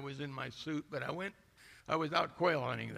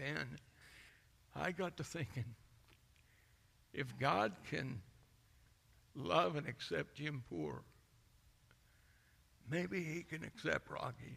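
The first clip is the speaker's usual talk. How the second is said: hushed, soft, husky voice, drawn out slowly; 4 dB quieter than usual. Retelling what Rocky said about being accepted: imitating Rocky, quieter and husky. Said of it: "his voice got a little husky".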